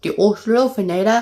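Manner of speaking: terrible put-on Australian accent, very high and loud. Naming a favorite dinosaur from the game, in a terrible Australian accent. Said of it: "That's a terrible Australian accent".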